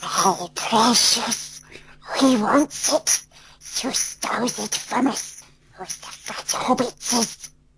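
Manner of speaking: high-pitched, creature-like voice. Asked by the host for his best impression, the guest does a Gollum voice. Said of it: "Can we hear some Gollum?".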